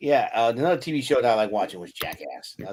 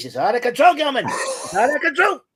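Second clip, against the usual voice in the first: very high-pitched, shrill, loud TV host voice; 5 dB louder than usual. Remembering a late TV host and doing his voice: Regis impression. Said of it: "I've always liked doing his voice".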